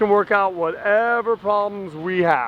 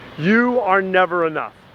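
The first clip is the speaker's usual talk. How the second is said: usual speaking voice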